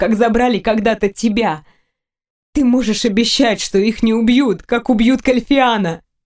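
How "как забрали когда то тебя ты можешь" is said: usual speaking voice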